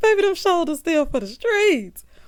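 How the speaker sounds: high, loud laughing throughout the words.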